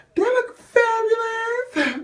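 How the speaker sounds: put-on New York accent, very high and loud. Talking to viewers while showing them something on camera, new york accent. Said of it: "fabulous in my New York voice".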